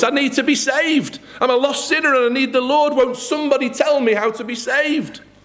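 mock very high, loud, tearful weeping cry. Storyteller acting out a weeping man crying out for someone to help, retelling a loud weeping cry. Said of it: "he cries out with a loud voice".

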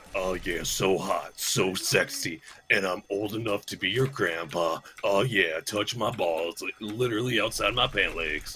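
very deep, soft, hushed masculine voice. Goofing around as Soldier 76: deep masculine Soldier 76 voice. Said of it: "but with a deeper masculine voice".

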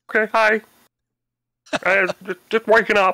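high-pitched frog puppet voice. Playing a character just waking up, answering another character: Kermit the Frog voice. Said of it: "it sounds like Kermit the Frog".

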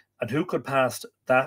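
ordinary delivery

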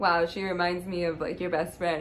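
normal talking voice

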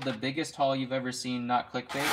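ordinary delivery

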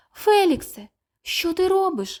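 high, scared, frightened cry of alarm. Little mice cry out to a panda floating below a waterfall, frightened shout. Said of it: "злякано закричали мишенята".

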